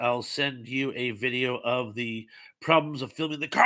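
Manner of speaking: ordinary talk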